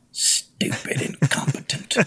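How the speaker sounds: muttered under the breath. Narrating a rider leaving a companion behind, muttering under his breath. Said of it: "mutter under his breath".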